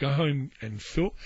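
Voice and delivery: ordinary delivery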